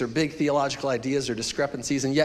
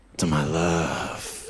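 very low, deep R&B vocal group voice; 10 semitones lower than usual. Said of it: "read this in the boys to men voice".

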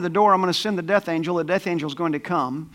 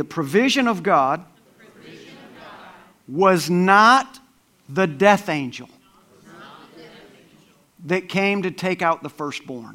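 slow, clear, deliberate, each word set down distinctly. Speaker asking listeners to say the point along with them, clear and slow. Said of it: "I'm going to say this clearly and slowly".

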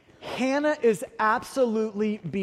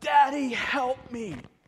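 put-on mild, crying child's scream; 4 semitones higher than usual. Asking listeners to picture their daughter strapped to a table: imitating a child screaming. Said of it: "her screaming at the top of her lungs".

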